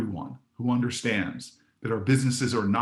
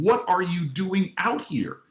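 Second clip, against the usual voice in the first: put-on angry shouted yell, pitched high; 7 semitones higher than usual. Retelling yelling at a man out in the storm: retelling a yell. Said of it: "And I yell at this man".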